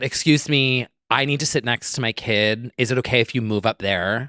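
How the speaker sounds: acted, entitled, snippy tone with attitude. Retelling a plane passenger asking to switch seats: imitating a request with attitude. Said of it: "with an attitude".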